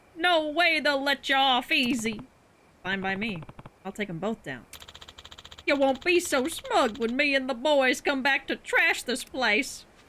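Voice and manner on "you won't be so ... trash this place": put-on southern-accented pirate voice, louder, slower. Voicing a rival pirate character, southern pirate voice. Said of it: "He's a southern pirate".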